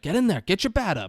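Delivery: very high-pitched coaching yell. Retelling a baseball scene where a player yells at a kid batter, retelling a yell. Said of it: "He's yelling".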